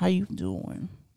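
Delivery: smooth, hushed, breathy, suave flirty whisper. Demonstrating the voice used when trying to be suave with a lady. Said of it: "your voice when you're trying to be suave with the lady".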